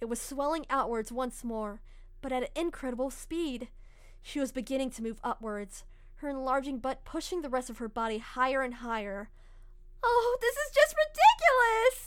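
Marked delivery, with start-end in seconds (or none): 10.0-12.1 very high, very loud, drawn-out outcry. Narrator reads a woman's line as her body keeps growing, cried out. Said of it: "Yuri cried out".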